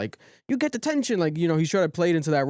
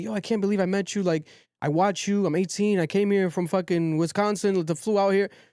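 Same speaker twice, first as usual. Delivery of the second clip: acted-out high, tearful, weepy, overwhelmed starstruck gush; 5 semitones higher than usual. Picturing young fans meeting a streamer, imitating a crying young fan. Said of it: "these young kids who are crying".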